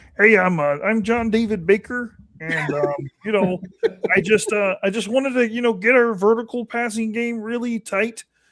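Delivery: high frog puppet character voice. Imitating a football coach in a Kermit the Frog voice. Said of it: "Your Kermit the Frog is a".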